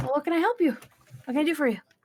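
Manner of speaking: put-on high, scrawny little boy voice. Voicing a scrawny tabaxi boy greeting a shopper: scrawny tabaxi boy voice. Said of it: "kinda scrawny tabaxi boy walks up to you".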